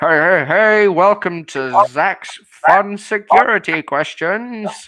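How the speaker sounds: high, loud, small intercom speaker-box voice. Narrating a scene where someone presses Request Entry: little intercom voice. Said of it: "you hear a little intercom voice".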